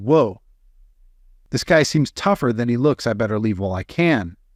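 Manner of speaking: normal talking voice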